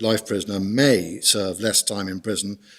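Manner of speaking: heavy stress placed on the word may. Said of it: "I emphasise the word may".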